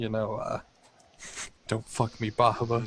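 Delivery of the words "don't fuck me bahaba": hushed whisper. A player voices his character's gamble just before drinking, whispering. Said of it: "just kind of whisper out".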